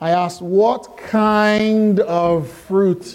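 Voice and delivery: speaking really slowly, drawn-out. Speaker stalls for time until someone gets back, speaking really slowly. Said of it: "I'm going to speak really slowly".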